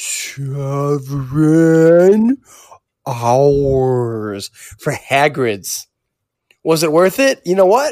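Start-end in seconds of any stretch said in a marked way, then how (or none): 0.0-5.9 stretched-out, drawn-out slow-motion delivery. Answering a question about the longest ride wait, in slow motion. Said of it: "Let me say it in slow motion".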